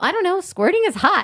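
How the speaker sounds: very high, too-loud, accidental outburst. Retelling words blurted while treading water in the ocean: retelling saying it louder than meant. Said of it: "I say louder than I mean to".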